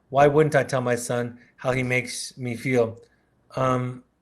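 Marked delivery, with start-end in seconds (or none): none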